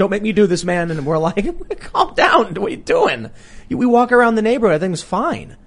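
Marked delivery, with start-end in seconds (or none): 0.0-0.9 mock frantic, panicky, freaked-out begging. Retelling a driver heading into a neighborhood, imitating him freaking out. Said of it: "he's shaking and freaking out".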